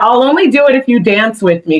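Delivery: ordinary talk, nothing marked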